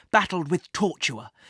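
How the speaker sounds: ordinary delivery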